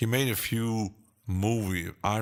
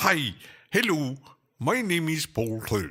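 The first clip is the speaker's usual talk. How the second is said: put-on light Irish accent, raised pitch; 7 semitones higher than usual. Speaker mimics a ranting channel host they watch for fun: Paul Third impression, a bit Irish. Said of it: "Sound a bit Irish".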